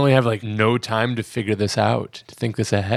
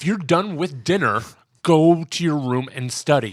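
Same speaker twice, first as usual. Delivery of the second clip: a little more angry, raised-pitch, stern fatherly tone; 5 semitones higher than usual. Redoing a quote of a dad ordering his son upstairs: imitating an angrier dad. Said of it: "he said it a little more angry".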